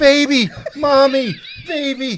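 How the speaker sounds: high-pitched, freaked-out, panicking robot voice. Retelling a cartoon scene where the robot's family is run over: imitating a panicking robot. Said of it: "he's freaking out".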